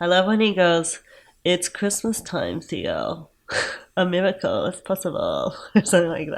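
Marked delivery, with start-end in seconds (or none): 1.4-5.5 drawling, sing-song villain voice, fake German accent. Quoting a movie villain's line, in a put-on german accent. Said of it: "but with a German accent ... when you're doing that voice".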